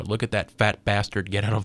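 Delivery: normal talking voice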